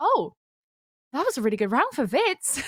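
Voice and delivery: swooping, caught-off-guard surprised tone. Imitating the co-caster's reaction to a round: imitating a surprised co-caster. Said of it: "the surprise in your voice".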